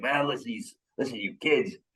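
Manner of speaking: put-on New Yorker's New York accent. Retelling a coach from new york talking in the south: imitating a new york accent. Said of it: "he talks like this".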